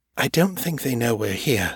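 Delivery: plain reading voice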